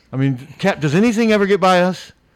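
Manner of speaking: high, loud, sarcastic, boastful tone. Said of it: "somewhat sarcastically".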